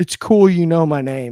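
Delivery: mock loud, very loud, stone-cold, ice-cold deadpan. Retelling a reply from someone met on a golf cart: retelling an ice-cold one-liner. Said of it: "one of the coldest one-liners".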